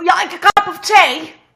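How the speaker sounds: high, loud, exaggerated mock Cockney British accent. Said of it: "try a British accent".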